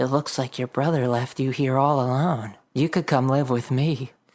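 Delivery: tiny, small little critter voice. Narrator voicing a raccoon speaking to Jessica, left alone in the yard, little voice. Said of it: "You hear a little voice".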